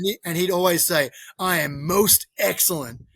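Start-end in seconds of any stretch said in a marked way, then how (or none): 1.4-2.9 mock punchy delivery, slow, powerful, full of oomph. Retelling how a gym member always answered a greeting: imitating his powerful, punchy delivery. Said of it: "he'd say it with this like power and oomph".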